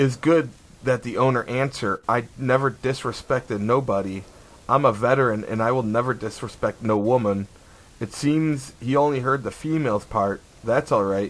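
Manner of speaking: ordinary talk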